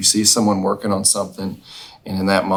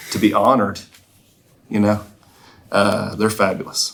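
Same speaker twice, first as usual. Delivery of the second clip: holding back tears, choking up. Telling how influential their mom and dad are, close to tears. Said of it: "I'm about to start crying".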